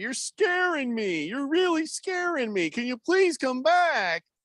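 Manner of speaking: very high-pitched, overwrought, over-emotional begging. Act out Travis Kelce clowning on the podcast, asking Chris to come back, with mock over-emotional begging. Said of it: "begging him much too emotionally".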